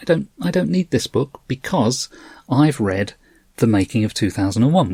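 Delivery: ordinary talk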